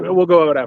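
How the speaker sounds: ordinary talk, nothing marked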